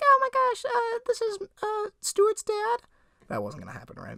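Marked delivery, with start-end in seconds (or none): 0.0-2.8 very high, tiny, squeaky voice. Retelling how faking his dad on the phone would sound: imitating own tiny squeaky voice. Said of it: "I had such a tiny little squeaky voice".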